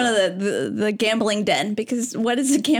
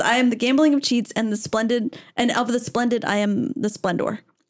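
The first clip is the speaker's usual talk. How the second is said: ordinary delivery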